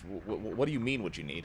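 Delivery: muttered whisper under the breath. Voicing a character asking a companion a question, whispering under the breath. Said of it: "whispers un-, under, under the breath".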